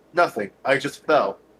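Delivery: ordinary delivery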